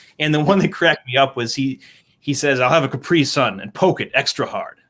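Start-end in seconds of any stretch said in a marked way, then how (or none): 2.6-4.7 put-on deadpan spy delivery. Retelling a line from a Bond spoof sketch set at a bar: retold James Bond deadpan. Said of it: "with the Bond like deadpan, very serious".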